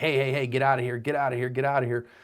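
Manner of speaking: using a big voice. Showing how the victim should drive off the dog, in a big voice. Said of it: "use a big voice".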